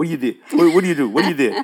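put-on Cajun accent. Retelling what he asked his dad after waking, in a cajun accent. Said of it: "I said it like Cajun".

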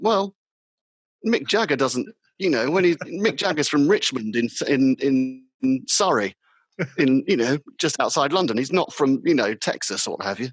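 ordinary talk, nothing marked

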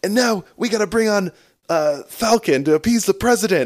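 acted angry yelling. Recapping a movie scene, imitating a commissioner yelling at a hero. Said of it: "this commissioner guy is like yelling at him".

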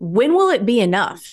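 mock accusatory, accusing tone. Retelling what someone asked them last year, mimicking an accusatory tone. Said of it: "in kind of like an accusatory tone".

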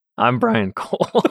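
high voice cracking and breaking. A podcast co-host introduces himself to new listeners, his voice cracking. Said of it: "My voice cracks".

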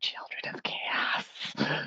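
soft, breathy whisper. Voicing a character who spots creepy children outside: whispering. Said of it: "she just whispers".

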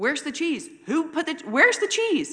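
very high, very loud, shrill frustrated shout. A mom recounts a moment at home with her family, retelling own yelling. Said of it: "I'm like yelling at everyone in the house".

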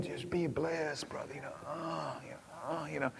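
put-on sugary condescending tone. A speaker mocks people with jargon and a sincere look: mock syrupy condescension. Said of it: "the condescending tone that's got a little syrup with it".

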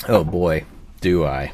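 very slow, heavy, drawn-out sarcasm. Asked whether they love a certain actor, the speaker replies: sarcastic reply. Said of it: "Please note the sarcasm".

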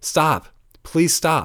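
mock bold, self-assured yell, pitched high. Retelling yelling at a departing bus driver: retelling a confident yell. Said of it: "I yelled in my most confident voice".

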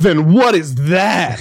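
smug, self-satisfied know-it-all voice, drawn out. Retelling a film scene where a woman answers a priest: imitating a smug reply. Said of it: "She was so smug".

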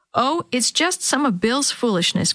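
half grumbling, half laughing. Granny answers Tommy's mother's anxious question about the late visit: half grumbling, half laughing. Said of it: "Granny said, half grumbling, half laughing".

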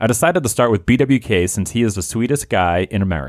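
ordinary talk

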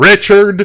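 loud, heavy stress on Richard. Asked to pronounce a name in all caps: loud, emphatic "Richard". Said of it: "do I do it with emphasis like this".

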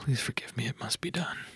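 hushed, soft, breathy whisper. In a role-play, a character about to open a door: whispering. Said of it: "I will whisper like".

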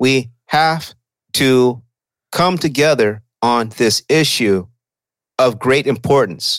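grand oratory, each word made heavy and weighty. Imitating how a politician talks, as if every word carries weight: imitating Hakeem Jeffries. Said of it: "he talks like this".

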